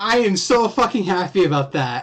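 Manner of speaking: elated screaming. Speaker reacts to a call they made months ago, screaming with joy. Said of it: "I'm so sorry for screaming".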